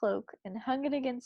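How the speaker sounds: ordinary delivery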